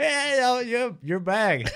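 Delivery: talking while laughing. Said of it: "'cause they were laughing like".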